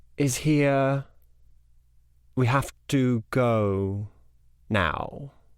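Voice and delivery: whispering. Narrator voices a character leaning into her ear, whispering. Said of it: "leans into her ear and kind of whispers something".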